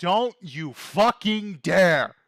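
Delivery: furious, angry shout. Voicing a character with fists clenched tight enough to bleed: furious shout. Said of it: "he's gonna shout".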